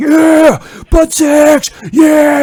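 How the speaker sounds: very high, stretched-out, drawn-out screaming. Retelling how another person screamed while getting into it: imitating someone screaming. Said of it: "He's screaming like".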